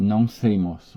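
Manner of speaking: worn-out, exhausted, very, very tired voice. Retelling how the woman in the car answered: imitating a very tired voice. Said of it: "com uma voz bem, bem cansada".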